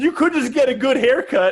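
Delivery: mock child's yell, high-pitched. Retelling a kid's comeback shouted while turning a corner: imitating a kid yelling. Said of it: "one of the kids yells".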